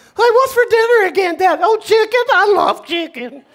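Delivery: high-pitched talking dog voice. Showing the audience the voice she gives her dog: her dog voice. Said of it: "That's my dog voice".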